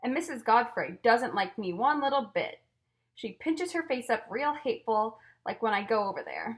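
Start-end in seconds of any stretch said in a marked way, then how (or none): none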